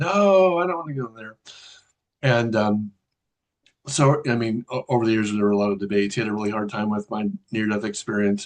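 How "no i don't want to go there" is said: play-acted high-pitched small child scream. Retelling refusing to be taken to church as a small child: imitating own childhood screaming. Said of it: "screaming out".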